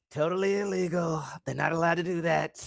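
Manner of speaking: high complaining voice. Quoting a politician's complaint in a Trump voice. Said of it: "I'm trying out that Trump voice".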